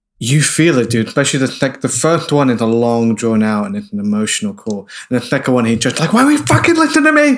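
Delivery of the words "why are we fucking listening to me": unhinged, crazed, very high-pitched outburst. Retelling a character's second phone call in a film: imitating someone acting insane. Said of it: "He's, like, insane".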